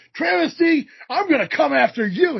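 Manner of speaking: shouted, wrestling promo style. Complaining about people yelling in promos, imitating someone yelling. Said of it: "they want to start yelling".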